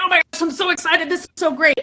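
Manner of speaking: put-on, high, bubbly, excited gush. Speaker acts out a client on video before filming, imitating an excited client. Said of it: "if your voice sounds like this, we're actually excited".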